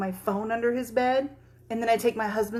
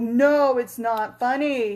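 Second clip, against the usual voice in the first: put-on angry voice, louder; 6 dB louder than usual. Retelling how her son reacts to being scared: imitating angry son. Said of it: "He gets so mad that you're scaring him".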